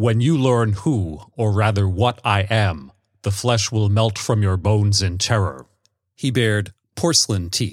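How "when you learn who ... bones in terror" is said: grating, harsh, level, monotonous drone. A stranger answers an old woman in a read story, harsh and monotonous. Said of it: "His voice was harsh and monotonous".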